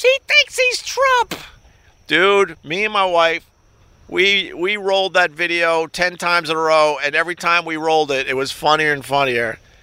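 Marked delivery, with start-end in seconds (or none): 0.0-1.3 very high, slow, mocking woman's scream. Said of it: "And then she screams".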